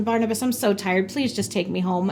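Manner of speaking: ordinary talk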